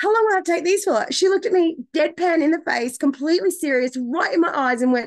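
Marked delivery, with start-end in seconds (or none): 0.0-1.1 naive, guileless, innocent high-pitched voice. Recounting asking the woman handing over the prescription, retelling an innocent question. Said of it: "I asked her so innocently".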